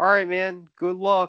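relaxed, slightly high voice. Retelling a hockey fighter asking someone to fight: calm Georges Laraque impression. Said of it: "so calm, so calmly".

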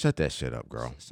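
calm, cool, relaxed, soft, dismissive tone. Showing how you have to tell someone to stop: calm delivery. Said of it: "you got to say it like that, ... you got to say it with a calmness".

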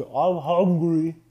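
put-on mouth-full voice. Retelling a game where Owen ate chips, imitating Owen with mouthful of chips. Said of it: "mouthful of chips".

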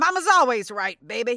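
loud, high mother voice. Answering herself about breakfast pizza: Mama's voice. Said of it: "responding to myself in Mama's voice".

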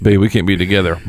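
plain

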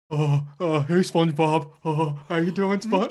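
put-on dopey cartoon character voice. Doing the voice on request for friends, Patrick Star voice. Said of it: "That's Patrick".

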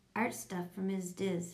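ordinary delivery, nothing marked

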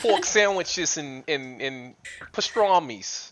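put-on New York accent. Friends tease a woman from Long Island about her accent, New York accent. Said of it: "she doesn't have that accent like this".

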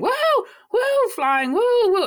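very high, swooping, excited whooping yells. Retelling Peter doing tricks in a film: imitating Peter screaming.

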